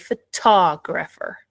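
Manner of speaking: photographer with the second syllable, tog, stressed. Giving the correct pronunciation in a meeting, stress on second syllable of photographer. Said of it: "put the stress on the second syllable and say".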